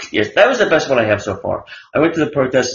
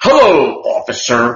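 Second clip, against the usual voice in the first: mock douchey newscaster voice, louder; 5 dB louder than usual. Imagining a cop pulling someone over, imitating Brian Williams's douchey voice. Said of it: "he gets with that voice".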